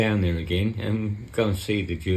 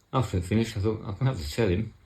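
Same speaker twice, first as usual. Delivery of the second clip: ordinary delivery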